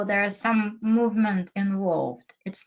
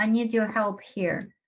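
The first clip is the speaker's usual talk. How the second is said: usual speaking voice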